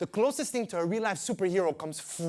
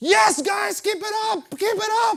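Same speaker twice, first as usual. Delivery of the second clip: very high, loud, encouraging yell; 13 semitones higher, 7 dB louder than usual. Retelling being pulled up a boat's side: imitating own past yelling. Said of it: "And I'm yelling".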